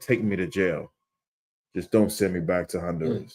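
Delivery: desperate, begging, pleading tone. Retelling a clip of a man held by ICE: imitating someone pleading. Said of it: "He was pleading".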